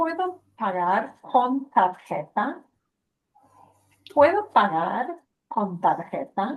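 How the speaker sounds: voice climbing in pitch at the end of tarjeta. Speaker teaching how to ask a question in Spanish; rising question intonation. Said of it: "that lift in your voice will sound like".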